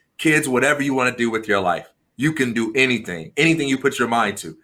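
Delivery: ordinary delivery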